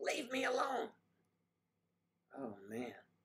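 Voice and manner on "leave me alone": mock very high, shrill screaming outburst. Retelling a woman screaming at the nurses, imitating Mary screaming. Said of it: "She's screaming".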